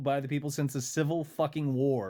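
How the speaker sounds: plain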